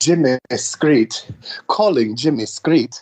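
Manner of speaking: female British-accented phone-assistant voice. Imitating a phone assistant announcing a call: Siri in female British accent. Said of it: "I have my Siri sent to a female British accent".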